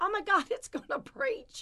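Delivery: very high cry at the top of the voice. Retelling pulling out a bush with a huge root, reenacting their own scream. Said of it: "I'm screaming".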